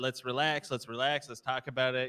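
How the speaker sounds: ordinary talk, nothing marked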